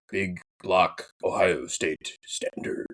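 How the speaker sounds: clumsy put-on deep voice, whispery and breathy. Rating a team, the speaker says a trademark phrase in a bad deep voice. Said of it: "That was the worst deep voice".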